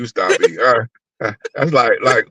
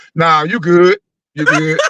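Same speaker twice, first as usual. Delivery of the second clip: calling out to someone; 4 semitones higher than usual. Retelling a story, yelling from the living room at a man making another sandwich, retelling a yell from another room. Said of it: "I'm yelling from the living room".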